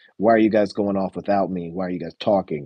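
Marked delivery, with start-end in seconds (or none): none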